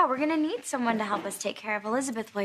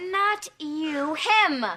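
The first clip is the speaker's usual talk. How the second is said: shouting, higher; 4 semitones higher than usual. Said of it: "Stop yelling".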